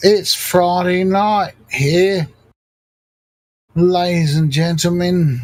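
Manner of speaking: terrible put-on Australian accent, high. Host addressing the audience on a stream: bad Australian accent. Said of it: "That's the worst Australian accent I've ever heard".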